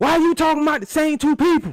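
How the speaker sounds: mock yelling, very high and loud. Reading out an all-caps comment from chat: imitating a chatter yelling. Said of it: "he's yelling this shit at me".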